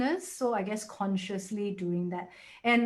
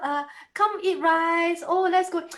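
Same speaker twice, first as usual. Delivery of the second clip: put-on high, loud, cooing baby talk. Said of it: "don't baby talk".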